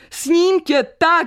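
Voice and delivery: high-pitched shout called out loud. Walking to the station at night, he shouts into the silence. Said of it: "Zakřičel do noci do ticha".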